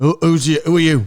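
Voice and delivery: put-on heavy Scottish accent. Retelling what an old Scottish man in an airport lounge said: imitating a heavy Scottish accent. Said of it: "So then the old Scottish guy, it's like".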